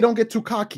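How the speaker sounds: plain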